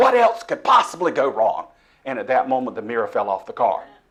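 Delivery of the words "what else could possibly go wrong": acted, very angry, loud, shrill, swooping outburst. Retelling driving after car trouble, speaker quotes what they said to God in a very angry voice. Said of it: "in a very angry voice to God".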